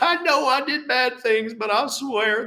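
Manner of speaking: high, put-on sad voice. Acting out a sentenced man's plea to the judge, in a put-on general Republican sad voice. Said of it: "that's my general Republican sad voice".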